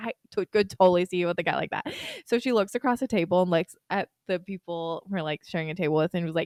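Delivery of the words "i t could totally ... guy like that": ordinary talk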